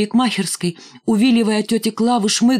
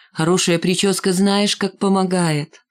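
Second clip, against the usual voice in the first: ordinary delivery, nothing marked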